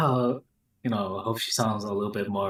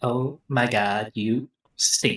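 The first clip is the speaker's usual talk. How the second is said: put-on valley girl voice. Joking that a fighting-game character sounds like a valley girl: imitating a valley girl voice. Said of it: "she's a fucking valley girl".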